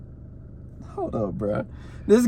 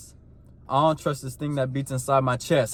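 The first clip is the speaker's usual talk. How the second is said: ordinary talk, nothing marked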